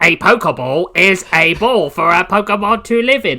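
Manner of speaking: high, loud machine-like gadget voice. Joking about Ash not knowing Pokemon, answering a friend's question: Pokedex impression. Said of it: "That's my Pokedex impression".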